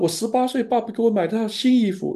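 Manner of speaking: very high, tearful voice that breaks. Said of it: "女儿抱的那个新衣服就哭了".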